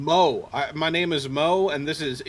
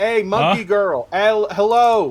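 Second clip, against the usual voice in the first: shouting, higher and louder; 6 semitones higher, 9 dB louder than usual. Trying to wake a sleeping monkey girl, hands cupped: yelling up to someone. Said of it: "just sorta yelling up to her".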